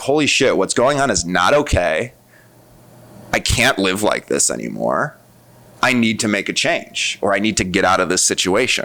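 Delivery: plain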